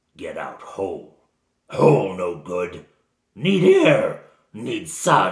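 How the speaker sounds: very loud, booming, snarling creature voice at full volume. Game master voicing Garrick, a bound gnoll, to the players, snarling. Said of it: "he snarls at them".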